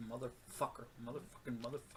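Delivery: very soft muttering under breath. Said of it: "she's cursing under her breath".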